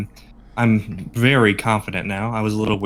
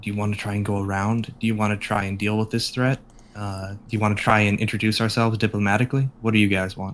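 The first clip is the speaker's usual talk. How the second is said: quiet, quick, hushed half-whispery voice; 3 dB quieter than usual. Player in character addressing the party, in a quiet half-whisper. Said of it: "I will say in a quiet, whispery voice".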